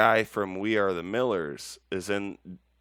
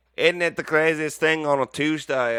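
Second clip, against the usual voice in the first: accent aiming British but sounding Australian; 8 semitones higher, 6 dB louder than usual. Imitating an interviewee's British accent, which comes out Australian-sounding. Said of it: "That's Australian".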